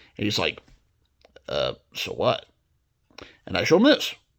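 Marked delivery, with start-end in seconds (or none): 1.5-2.5 grumpy tiger voice, pitched much lower. Speaker acting out showing things to a grumpy tiger who answers, grumpy tiger voice. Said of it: "a grumpy tiger".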